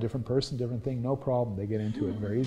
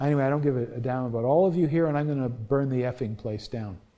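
normal talking voice

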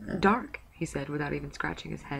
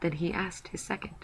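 plain

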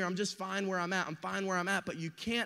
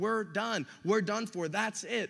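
ordinary talk

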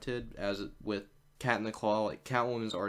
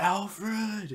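very high, emotional scream, full of feeling; 11 semitones higher, 4 dB louder than usual. Quoting how he screams in the Poison Ivy episode: screamed name Alfred. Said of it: "when he just screams Alfred, like".

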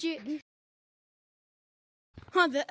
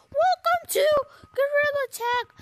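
high, squeaky voice cracking and misbehaving oddly. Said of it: "I don't know why my voice is doing that".

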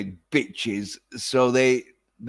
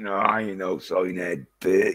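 mock deeper voice, pitched lower; 5 semitones lower than usual. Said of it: "I'll fucking lower my voice to prove".

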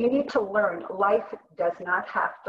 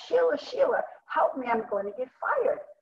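put-on yell, called out high with swinging pitch; 5 semitones higher than usual. Retelling how a client called in a panic: imitating a client yelling. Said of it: "He was yelling".

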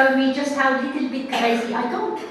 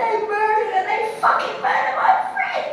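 play-acted, high screaming through sobs; 8 semitones higher than usual. Recounting a meltdown after learning a friend was murdered, retelling screaming and crying. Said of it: "I'm screaming".

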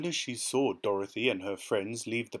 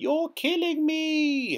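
very high, piercing shriek with me drawn out; 6 dB louder than usual. The witch, doused with a bucket of water, begins to dissolve, shrieked. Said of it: "she shrieked".

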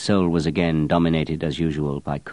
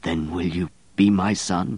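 stammering, stuttering, slower pace; 2 semitones higher than usual. Narrator reading Richie's question to Grenouille, stammering. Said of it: "He stammered".

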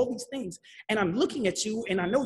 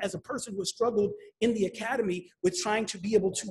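ordinary talk

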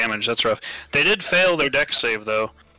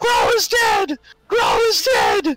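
terrified, panicked group screaming, much higher and louder; 4 dB louder than usual. The narrator voices a whole group screaming almost in chorus; terrified screaming in chorus. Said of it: "they start screaming".

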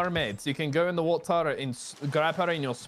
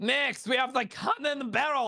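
voice cracking, much higher, slower; 9 semitones higher than usual. Explaining the ship's barrels to the others, voice cracking. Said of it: "I voice cracked".

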